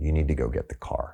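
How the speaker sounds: put-on very calm voice. Retelling how his partner in labor told him to get the car: imitating someone speaking very calmly. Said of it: "Very calmly".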